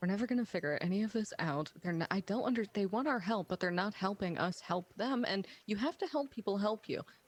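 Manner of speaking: irritated, angry grumbling. A player voices Sora out in the town of Rule, Sora muttering angrily under breath. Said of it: "mumbling under her breath angrily".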